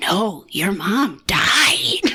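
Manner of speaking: very slow, creepy doctor voice. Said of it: "why is he saying it like that?".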